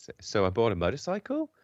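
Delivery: rising, question-like uptick at end of "motorcycle". Talking about the uptick at sentence ends, rising pitch on motorcycle. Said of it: "Uptick, you know... 'cause that's a question".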